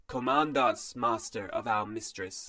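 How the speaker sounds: metallic, machine-like iron-armored guard voice. Narrator reads an armored guard answering Bastion in a metallic voice. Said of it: "said one in a metallic voice".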